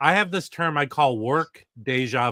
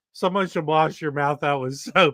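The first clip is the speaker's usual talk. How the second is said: normal talking voice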